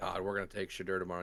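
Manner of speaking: irritated, pissed-off voice. Retelling another speaker's past words about the draft pick: imitating someone sounding pissed. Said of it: "And you sounded pissed about it".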